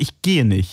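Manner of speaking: low, decided tone. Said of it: "dann bin ich wirklich sofort".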